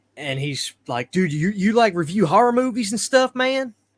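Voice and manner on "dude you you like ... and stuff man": loud, high, put-on country accent. Retelling what a guy said on learning about the videos: put-on country accent. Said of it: "I'm doing my best country accent".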